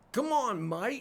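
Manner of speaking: poor put-on Australian accent. Speaker tries out an accent for an audience, terrible Australian accent. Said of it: "I can do a terrible Australian accent".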